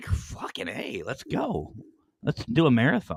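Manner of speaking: acted-out upset outburst. Retelling learning there was a whole new season, acting out own upset outburst. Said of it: "And I actually got upset".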